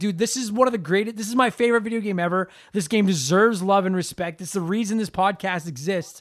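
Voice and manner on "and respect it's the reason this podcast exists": ordinary talk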